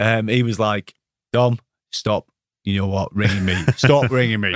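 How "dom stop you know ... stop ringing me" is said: put-on proper, strong Cockney accent. Retelling being told to stop phoning at four in the morning: Razor Ruddock Cockney accent. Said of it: "proper, um, Cockney accent".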